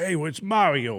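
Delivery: put-on New York accent. Retelling a casting call, imitating a New York plumber voice. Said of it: "like a New York plumber".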